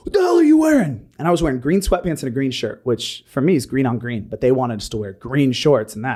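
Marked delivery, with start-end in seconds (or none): 0.1-1.1 very high, loud, shrieking drill sergeant scream. Retelling how a master sergeant reacted at the weigh-in: imitating a sergeant screaming. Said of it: "starts screaming at me like".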